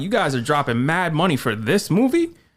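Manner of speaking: ordinary delivery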